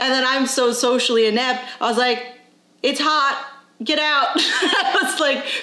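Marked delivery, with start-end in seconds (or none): 2.8-4.3 play-acted harsh, mean-sounding, pitched-up voice. Retelling what they said to a kid who came up, retelling sounding mean. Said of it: "probably sounded very mean".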